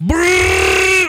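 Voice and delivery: high, loud, face-shaking power-up yell.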